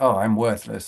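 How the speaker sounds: ordinary delivery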